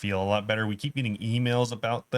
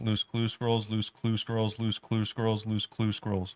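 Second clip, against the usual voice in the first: quickly repeated words, said very fast. Taking the challenge to say it three times fast: tongue twister said fast. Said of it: "Say it three times fast".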